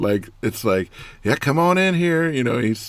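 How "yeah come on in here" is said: very high, loud, doting coaxing call. Retelling a video of a man coaxing his chickens: imitating Stone Cold Steve Austin talking to chickens. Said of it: "he talks to them like they're his children".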